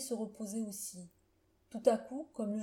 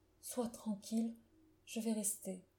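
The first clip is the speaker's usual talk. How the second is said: murmured softly, quieter; 5 dB quieter than usual. A man answers a woman begging him to stay until the end, murmured. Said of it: "Il murmura".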